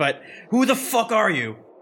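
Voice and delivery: emotional, half-yelled outburst with a yelling edge. Confronting a stranger who just saved the group, yelling. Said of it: "Sorry if I'm yelling".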